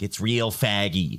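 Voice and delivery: rough, not-great attempt at a Boston accent. Retelling what grandma finally said after the grandchildren teased her, in a not-great Boston accent. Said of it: "she had a Boston accent, and it, I'm doing it not great right now".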